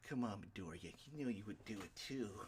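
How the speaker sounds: creepy, pervy, leering voice. Retelling a story to a listener, quoting Mineta in his creepy voice. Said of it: "his fucking creepy ass voice".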